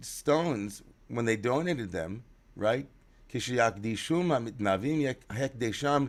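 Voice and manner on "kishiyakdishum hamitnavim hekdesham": normal talking voice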